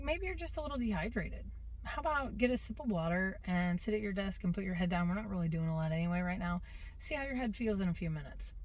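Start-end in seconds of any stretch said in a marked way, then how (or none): none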